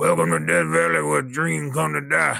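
raspy, rough, creaky gruff growl. Quoting what the coach said on air: Ed Orgeron impression. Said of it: "I can't do a great Orgeron impression".

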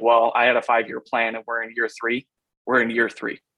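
put-on deadpan, flat, expressionless delivery. Quoting a man who was asked how far along his rebuild is: retelling a deadpan remark. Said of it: "he was deadpan just saying that".

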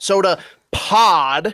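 slow, drawn-out stress on POD.

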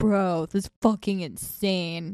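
put-on stoner dude voice. On their podcast, redoing another person's stoner man impression. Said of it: "Her stoner man impression".

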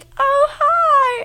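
very high, giddy, squealing head voice. Retelling being caught unprepared on the call: imitating own high head voice. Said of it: "I get really high in my head voice".

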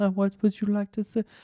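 put-on hushed half-whisper with a French accent. Retelling a hostess at a restaurant: imitating a half-whispering French-accented hostess. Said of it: "she had a French accent, ... it was a whisper job the whole time".

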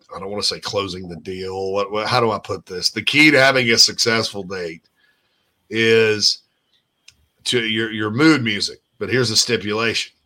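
ordinary delivery

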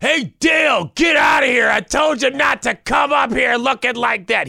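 put-on scolding scream, shrill and very high. Retelling what a drunk man's wife yelled at him at the stadium, imitating a woman screaming. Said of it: "his own wife was screaming at him".

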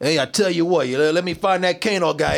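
put-on Brooklyn accent. Quoting a guy from the game Mortal Kombat, in a Brooklyn accent. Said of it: "He's talking like he's from Brooklyn".

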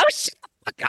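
very high mocking voice. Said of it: "two octaves higher".

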